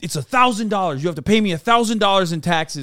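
put-on yelling. Retelling being confronted by a guy, imitating someone yelling. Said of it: "the guy's like fucking yelling at me".

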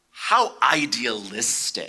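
hissed words, pitch swooping and swinging wide. A speaker voices a frowning Jonadab's reply to the listeners, hissing as Jonadab. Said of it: "he hisses".

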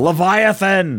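shouting. Retelling a game scene where the captain cries out: retelling the captain's shout. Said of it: "the captain shouts".

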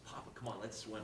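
ordinary delivery

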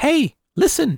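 high-pitched put-on fairy voice. Voicing characters, speaker does the Legend of Zelda fairy voice. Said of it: "In the voice of the fairy. From Legend of Zelda".

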